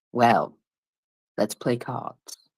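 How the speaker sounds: stern, deep-voiced delivery. Imagining him sitting down at a casino table: stern deep voice. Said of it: "with a stern look and his deep voice".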